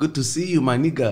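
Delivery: badly done Ghanaian pidgin accent. Explaining how people in Ghana say it: terrible Ghanaian pidgin accent. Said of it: "that's a terrible accent".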